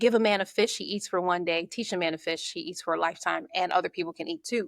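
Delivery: ordinary talk, nothing marked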